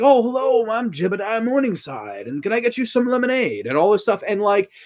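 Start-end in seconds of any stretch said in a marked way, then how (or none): 0.0-3.7 put-on very sweet old man voice. Describing a film character before he turns evil: sweet old Jebediah Morningside impression. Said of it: "he's the sweetest old man ever. He's like".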